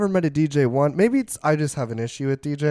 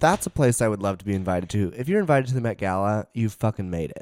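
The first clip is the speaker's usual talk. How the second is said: usual speaking voice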